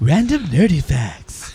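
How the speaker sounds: gentle, effeminate announcer voice. Asking why the other chose that voice, repeating it in an effeminate Deep Thoughts voice. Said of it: "like the effeminate version of Deep Thoughts".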